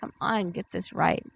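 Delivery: ordinary delivery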